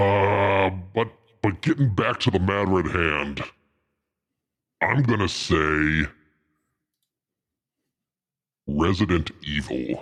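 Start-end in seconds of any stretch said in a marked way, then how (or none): 4.8-10.0 demonic voice, like a demon. Giving an answer in a guessing game: Satan voice. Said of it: "In my Satan voice".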